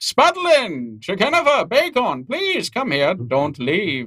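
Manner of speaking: high, swooping, called-out voice. Voicing a hooded figure calling the party back: calling out to the party. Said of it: "he starts calling to all of you as you walk away".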